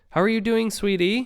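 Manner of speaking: very high, sickly-sweet, cloying, sugary coo. Narrator mocking condescension during a blood draw, cloying fake-sweet voice. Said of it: "I asked, cloying".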